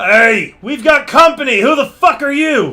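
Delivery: high-pitched loud hollering. The game master voices a guard who notices newcomers at a door, yelling. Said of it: "And he yells".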